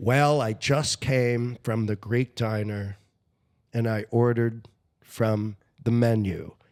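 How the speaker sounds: very slow, drawn-out delivery. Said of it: "like, really slow".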